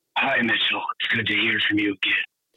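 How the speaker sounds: put-on gruff superhero voice. Greeting the other speaker, copying the new intro: Batman-like voice. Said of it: "it sounds kinda like Batman".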